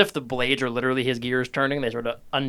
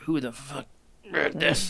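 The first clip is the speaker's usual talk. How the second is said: annoyed, frustrated groaning outburst; 2 semitones higher, 4 dB quieter than usual. Voicing frustrated characters finding broken tunnels: frustrated groaning. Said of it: "frustrated and groaning a little".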